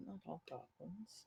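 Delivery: hushed, barely voiced mutter under the breath. In a game, Amelia reacts to talk of goblins' nature: muttering under breath. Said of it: "kind of under her breath, Amelia just mutters".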